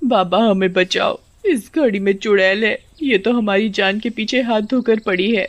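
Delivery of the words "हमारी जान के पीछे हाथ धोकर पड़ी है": ordinary delivery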